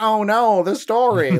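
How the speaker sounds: very slow, high, drawn-out dorky, dweeby voice. Retelling how a character first talked: imitating a dorky voice. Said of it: "he was talking like a fucking dweeb".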